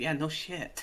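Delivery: soft, grumbling, muttered aside. Voicing Barry, who answers the storm warning by muttering.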